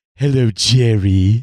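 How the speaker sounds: deep, low character voice. Greeting the stream's audience with his one effective voice, Newman from Seinfeld voice. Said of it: "the only voice I can actually do effectively".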